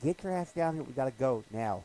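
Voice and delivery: loud yell. Retelling a man yelling at the guy on the rock: retelling a yell. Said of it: "starting to yell at the guy".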